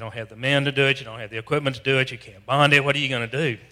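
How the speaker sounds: ordinary delivery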